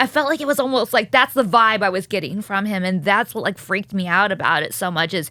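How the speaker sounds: ordinary delivery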